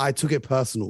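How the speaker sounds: ordinary talk, nothing marked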